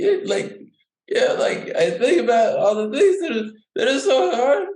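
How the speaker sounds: very high, whiny, teary, near-crying voice. Showing people how they start whining about their life: whiny crying voice. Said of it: "it starts to sound like I'm crying".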